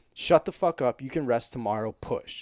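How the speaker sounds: big, booming, commanding voice. Speaker quotes the voice in the back of their head, booming voice like Sean. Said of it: "this booming voice in the back of my head".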